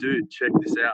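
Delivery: ordinary talk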